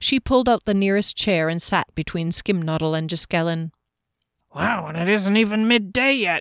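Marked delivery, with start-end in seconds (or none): 4.5-6.4 grumbling voice. Reading a story, Janik remarks at the breakfast table: muttered. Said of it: "Janik muttered".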